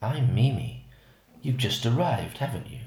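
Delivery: husky, seductive, sexy voice. Reading a story where a naked neighbour greets the narrator: sexy, husky voice. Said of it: "In this sexy, husky voice, she said".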